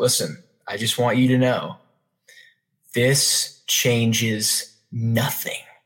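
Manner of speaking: acted-out, mock-serious tone. Retelling what he told the speaker, imitating someone getting all serious. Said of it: "he gets all serious".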